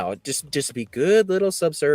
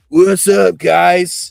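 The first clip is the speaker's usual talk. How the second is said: put-on sloppy drunk man voice; 6 semitones higher, 11 dB louder than usual. Retelling what a stumbling drunk stranger said at a bar: imitating a sloppy drunk man. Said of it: "He was just sloppy drunk".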